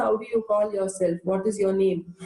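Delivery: normal talking voice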